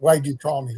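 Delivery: put-on dark, gravelly, angry voice. Retelling a phone call from an angry caller: imitating Lee's dark, gravelly angry voice. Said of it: "this dark, gravelly voice, and he's angry".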